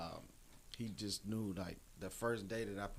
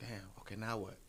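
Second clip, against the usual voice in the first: ordinary delivery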